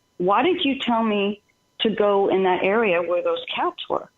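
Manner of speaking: ordinary talk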